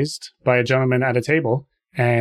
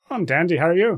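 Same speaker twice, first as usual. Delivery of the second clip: put-on Irish accent, much higher pitch; 5 semitones higher than usual. Taking a turn in a group voice game, speak in a put-on Irish accent. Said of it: "it's Irish now".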